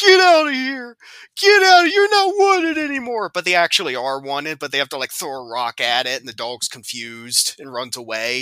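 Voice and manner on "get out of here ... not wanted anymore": very high, very loud crying yell. Describing a movie scene of someone driving a dog away: imitating someone yelling at a dog. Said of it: "yelling at the dog to".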